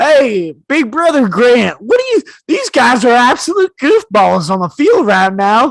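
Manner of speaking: loud, swooping put-on Southern accent. Speaker demonstrates the sports show he would pitch, Southern accent. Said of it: "where I talk like in Southern accents".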